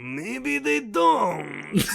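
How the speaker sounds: very high, creaky, rough longtime smoker's rasp. Acting out a character's reply in a retold scene: voice like a forty-year smoker. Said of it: "like you've been smoking for forty years".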